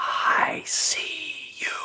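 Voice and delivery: disembodied, unseen, whispered voice. Telling a story of a man in the upper temple hearing a voice: imitating a whisper. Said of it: "he can hear this whisper".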